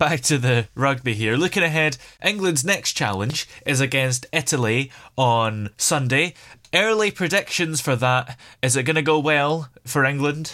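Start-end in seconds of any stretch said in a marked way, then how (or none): 6.7-10.5 knowing, wry, dry sarcastic tone. Putting a question to the panel, with wry sarcasm. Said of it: "a wry element of sarcasm in your voice".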